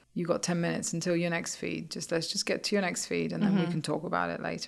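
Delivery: ordinary delivery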